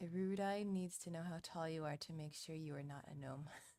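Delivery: normal talking voice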